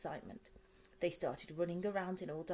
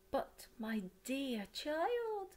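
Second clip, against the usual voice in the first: slow, high, swooping cry; 8 semitones higher than usual. Mrs. Fox sits up after her child says the chickens are real, crying out. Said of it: "she cried".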